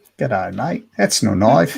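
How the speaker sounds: clumsy, mangled put-on Australian accent. Joking after mentioning a terrible Australian accent: bad Australian accent. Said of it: "it's like me doing an Australian accent".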